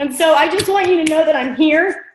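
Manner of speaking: voice catching, choking up, about to cry. Telling the team how much they're loved, choking up, about to cry. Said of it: "And I'm going to cry".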